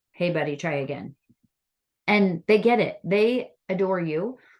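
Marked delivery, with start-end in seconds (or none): 0.2-1.2 firm and quieter. Speaker demonstrates correcting a child who hit a buddy, in a firmer tone. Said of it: "you need to be a little firmer".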